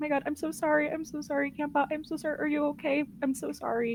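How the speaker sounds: crying out, pitched high. Retelling how she reacted, the speaker imitates her crying. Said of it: "she's like crying".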